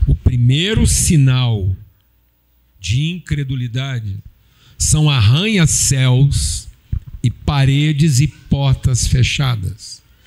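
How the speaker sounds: very slow, calm, unhurried delivery. Stating the first point of a talk, very slow and calm. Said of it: "deixa eu falar bem devagar e calmo".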